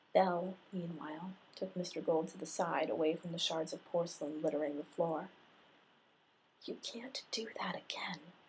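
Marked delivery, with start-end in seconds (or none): 6.7-8.2 hissed through clenched teeth, quieter and slower. Taking him aside, away from the broken porcelain, she hissed through clenched teeth. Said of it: "she hissed through clenched teeth".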